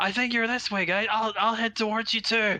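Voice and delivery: very high-pitched shout calling across. Player voices his character calling to the others to find them, shouting. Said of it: "he'll start shouting".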